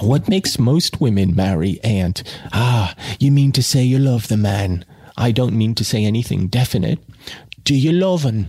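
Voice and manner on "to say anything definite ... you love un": plain reading voice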